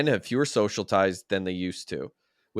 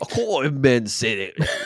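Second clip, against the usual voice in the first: loud put-on British accent, read-aloud style; 4 semitones higher, 5 dB louder than usual. Reading an article on men's friendships aloud, British accent. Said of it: "Is that British?".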